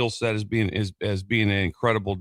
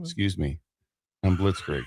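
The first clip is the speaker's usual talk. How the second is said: put-on calm, composed voice with swooping pitch; 3 semitones lower than usual. Retelling a man speaking up right behind them as they prepare to speak, imitating Blitzkrieg's calm voice. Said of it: "the calm voice right behind me".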